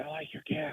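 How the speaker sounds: soft, hushed, barely voiced whisper. Retelling what the lady helping voters whispered to him: imitating a whisper. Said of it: "just whispered".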